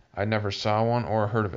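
plain

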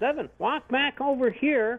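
high-pitched shouting. Recounting a shoot, the speaker quotes another man calling him over: retelling a yell. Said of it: "And then Mark yells".

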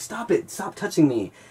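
frantic, high, drawn-out, freaked-out voice. Retelling how everyone urged him to fight, acting out freaking out. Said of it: "And I'm freaking out".

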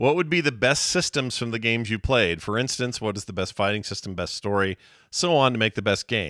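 normal talking voice

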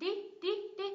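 di in condition lifted high. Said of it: "Nhấn âm tiết thứ hai này".

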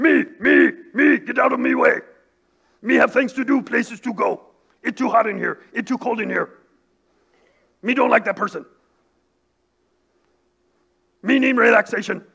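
furry puppet cartoon monster voice. Pastor preaching about the body, voicing its selfish side: Cookie Monster voice. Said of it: "when pastor does that voice".

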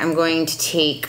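normal talking voice

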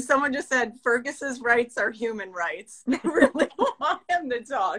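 words broken up by laughing, talking through laughter. Reading out what someone just said, laughing while talking. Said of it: "I'm laughing".

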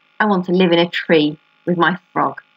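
plain

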